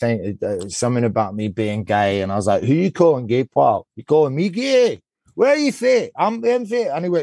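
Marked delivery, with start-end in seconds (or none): 2.6-6.9 put-on Glaswegian accent, pitched up. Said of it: "I pretended that I was from Glasgow".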